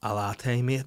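flat, completely humourless, dead-serious, matter-of-fact tone. Retelling a barista answering about a similar drink: imitating a barista's deadpan reply. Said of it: "with completely no joke in his voice".

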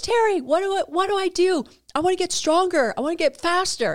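mock shouting voice. Retelling what an old neighbor called out: imitating someone yelling out. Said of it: "He yells out, out to me".

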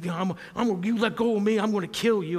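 put-on mad outburst. Retelling what an angry man shouted at the speaker, acting him out all mad. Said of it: "He's all mad".

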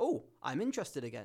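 ordinary delivery

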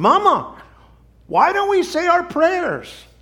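put-on very high, bright, cheerful little-girl near-shout. Narrator voicing a little girl asking her mother in a diner, cheerful, almost shouting. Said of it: "her cheerful, almost shouting voice".

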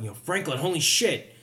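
sudden, high, shouted-out outburst. After the player hits a guy and he goes down, Linus yelling out. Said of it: "Linus yells out".

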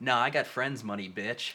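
ordinary talk, nothing marked

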